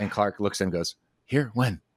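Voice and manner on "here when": put-on baffled, caught-off-guard, totally befuddled tone. Retelling a film scene where a man sees news, imitating a befuddled reaction. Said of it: "Just totally befuddled".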